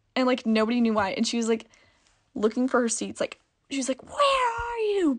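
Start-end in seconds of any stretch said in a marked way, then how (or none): 4.0-5.1 put-on very high, horrifying guttural shrieking scream. Speaker retelling a screaming woman looking for her seats, imitating loud guttural screaming. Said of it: "it was horrifying and really loud".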